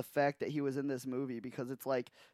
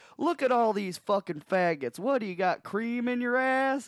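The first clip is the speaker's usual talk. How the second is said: mock brash, high, jeering holler; 8 semitones higher, 4 dB louder than usual. Retelling a movie scene where Butch Stifler comes out: imitating Butch Stifler yelling. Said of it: "yelling like the most".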